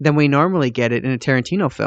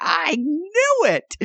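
high, slow, drawn-out triumphant gloat. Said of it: "He was just like".

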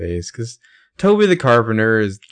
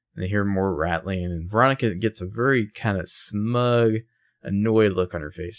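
ordinary delivery

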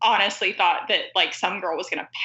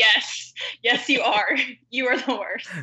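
mock-shouting in a higher voice; 5 semitones higher than usual. Retelling shouting at a TV character while watching a show: retelling shouting at the TV. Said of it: "I started shouting at my TV".

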